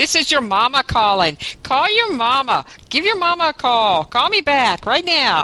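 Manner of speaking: swooping high put-on voice.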